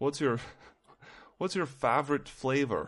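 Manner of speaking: put-on odd foreign accent sliding between Swedish and Russian. Imitating a man whose accent wasn't his natural one, in an odd Swedish-Russian accent. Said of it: "Swedish kind of Russian kind of moving in and out".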